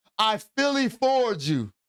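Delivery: mock resentful, yelling outburst. Acting out a daughter slamming her bedroom door: imitating a daughter yelling. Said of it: "she slams the door and yells".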